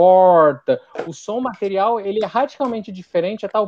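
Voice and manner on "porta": loud, strongly curled r in porta. Explaining how someone from inland São Paulo says porta: strongly curled R in porta. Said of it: "com R muito puxado".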